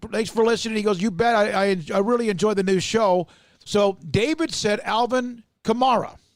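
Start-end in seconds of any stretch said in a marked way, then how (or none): none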